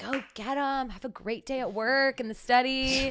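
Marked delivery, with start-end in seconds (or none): 0.0-0.9 soft half-whisper under the breath. Retelling how everyone sent her off to work, imitating their half-whisper. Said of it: "like whispering".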